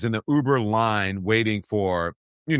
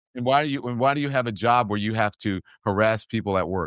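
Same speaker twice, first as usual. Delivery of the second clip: usual speaking voice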